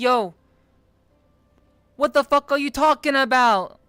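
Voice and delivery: loud, put-on Brooklyn accent. A streamer retells what he said to a man who visits his streams, in a Brooklyn accent. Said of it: "I turned on the Brooklyn accent".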